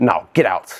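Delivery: put-on deadpan, straight-faced delivery. Retelling a stranger's reply to their age: imitating a deadpan delivery. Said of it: "she says this with the most, like, straight face of all time".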